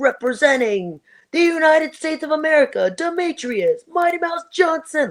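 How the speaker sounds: high, full-throttle rock star announcer voice.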